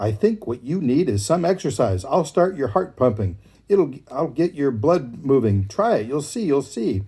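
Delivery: pushy, impatient, demanding, urging voice. Narrator reading a fable, voicing the hare urging the tortoise, impatient hare. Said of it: "The hare couldn't understand how the tortoise ever accomplished anything. / demanded the hare as he hopped circles around the tortoise".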